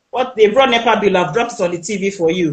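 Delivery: ordinary delivery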